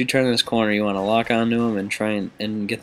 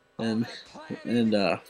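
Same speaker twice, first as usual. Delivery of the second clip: ordinary delivery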